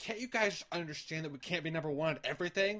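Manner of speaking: super condescending, patronizing talking-down tone. Retelling what a kid in a video said: imitating a condescending kid. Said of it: "super condescending".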